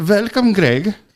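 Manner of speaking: put-on German accent, loud and high-pitched. Asked to let them hear it, greeting Greg in a German accent. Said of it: "let me hear the German".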